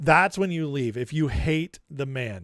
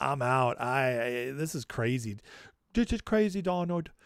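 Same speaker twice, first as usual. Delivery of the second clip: bad, off-the-mark put-on woman's voice, on purpose; 3 semitones lower, 6 dB quieter than usual. Imagining a wife leaving her husband: bad Melania Trump impersonation. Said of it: "That was a bad impersonation of you".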